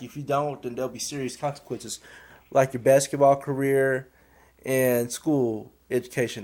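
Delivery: ordinary talk, nothing marked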